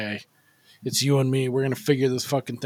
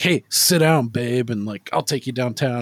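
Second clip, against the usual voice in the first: put-on tough-guy tone; 3 dB louder than usual. Retelling a scene where a character talks tough to a woman: imitating tough talk. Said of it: "he's talking real tough with her".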